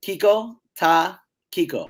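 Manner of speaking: slowed-down, deliberate pace. Asked to say the Aruban slang phrase slower, repeating it said slower. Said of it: "say it slower".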